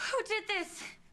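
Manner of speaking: gasping in shock. After warning not to let Autumn into the viewing room, gasping in shock.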